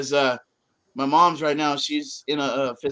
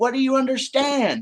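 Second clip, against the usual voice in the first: put-on furious, angry scream, higher; 11 semitones higher than usual. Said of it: "I screamed at him".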